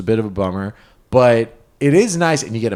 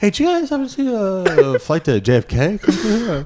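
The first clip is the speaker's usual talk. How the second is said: put-on raised-pitch delivery; 6 semitones higher than usual. Teasing another speaker about asking for a missed flight: mock asking about a lost dog. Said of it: "You're asking like it's a lost dog".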